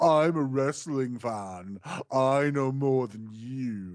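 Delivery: slow, snooty, nose-in-the-air know-it-all tone. Mocking someone who thinks he's the smartest guy: imitating a snooty know-it-all. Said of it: "one of those snooty motherfuckers".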